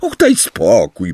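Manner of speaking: scornful, dismissive, contemptuous snort. Hermione cuts in before Harry can answer Ron, snorting with contempt. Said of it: "prychnęła z pogardą Hermiona".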